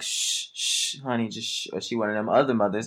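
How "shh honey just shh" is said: slow, drawn-out, soothing, gentle motherly shush. Speculating how a mother might quiet her crying child, imitating a nice mother shushing. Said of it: "one of those nice mothers that'll be like".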